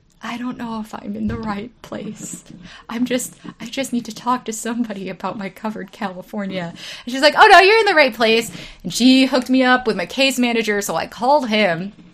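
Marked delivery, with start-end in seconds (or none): 0.2-6.7 small, soft, sorrowful little voice, very sad. Recalling a phone call seeking help with Covered California; retelling in a really sad voice. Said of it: "in this really sad voice today".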